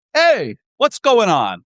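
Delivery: slow, swooping, streetwise New York street voice. Leading a character exercise, showing a line as if on new york streets: new york street character. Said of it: "It's like you're on the streets of New York".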